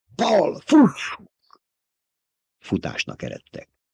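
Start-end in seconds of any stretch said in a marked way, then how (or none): 0.2-1.3 very high-pitched, piercing, shrill scream. Narrator reading Jessica's line to Paul as a hissing sound nears, screaming. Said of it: "Sikoltotta Jessica".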